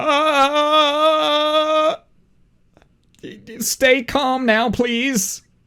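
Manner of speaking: scared stiff, very high, slow, stretched "uh". Voicing a stall owner facing a growling player: terrified. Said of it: "he's terrified".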